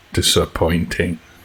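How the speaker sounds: deep, low, quiet, solemn voice. Voicing a tall robed figure who judges the party: deep voice. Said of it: "in a deep voice".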